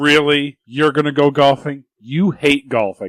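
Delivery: put-on sceptical, disbelieving, doubtful tone. Retelling a scene where Carol doubts the golfing plan: imitating Carol, disbelieving. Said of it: "you can tell that she doesn't believe him".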